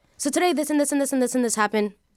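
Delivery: fast run-on patter. A TikTok storyteller demonstrates their storytelling pace: rapid fast talking. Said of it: "So I naturally talk very fast".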